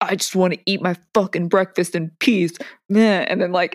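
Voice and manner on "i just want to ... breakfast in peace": put-on aggressive man voice. Retelling a husband's aggressive reply at breakfast: imitating an aggressive husband. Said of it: "still kind of being aggressive".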